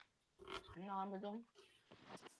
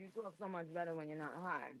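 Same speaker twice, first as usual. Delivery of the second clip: normal talking voice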